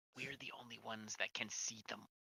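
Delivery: very quiet stage whisper. Speaking in character as Zed to Tika: whispering. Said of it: "He was whispering".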